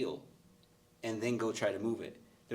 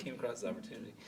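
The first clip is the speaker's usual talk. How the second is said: soft, offhand, nonchalant delivery. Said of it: "He's so nonchalant".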